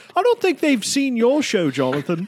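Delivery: very high, sing-song, swooping, offhand jab. Mocking Jonathan's show: imitating Nolan. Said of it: "throwing complete shade".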